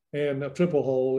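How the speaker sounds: ordinary talk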